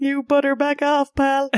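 high cartoonish voice. Saying a pun title aloud in a Rick and Morty voice. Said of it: "Said in kind of like a Rick and Morty".

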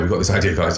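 ordinary talk, nothing marked

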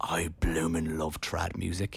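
mock starstruck gush, slow, low, whispered.

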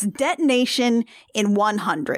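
normal talking voice

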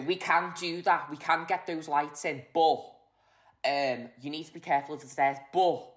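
put-on full-on Scouse accent. Imitating the speaker's former tour manager, Scouse accent impression. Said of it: "he's full-on Scouser".

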